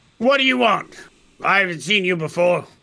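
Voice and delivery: grouchy, grumbling dwarf voice. Narrator voices a dwarf greeting a newcomer at his building, grumbling dwarf. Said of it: "and he's grumbling".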